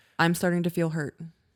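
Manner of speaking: ordinary delivery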